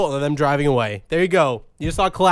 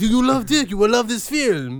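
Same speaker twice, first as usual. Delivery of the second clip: put-on French accent, raised pitch; 6 semitones higher than usual. Joking about Les Miserables, putting on a French accent. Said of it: "That's my French accent".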